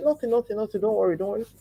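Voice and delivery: mock crying, tearful voice. Telling how she answered her husband while crying: retelling her tearful reassurance. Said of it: "I'll be lost in thought and I'll be crying".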